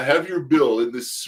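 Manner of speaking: loud put-on Irish accent. Retelling the waiter coming over with the bill at closing time, Irish-sounding accent. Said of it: "that was more of an Irish accent".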